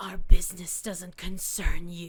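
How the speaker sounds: very loud, awful, strained, forced-out voice. A narrator voices a figure speaking as the player flies away; strained, forced voice. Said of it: "a really awful sounding voice as if like the uh, vocal cords are being strained".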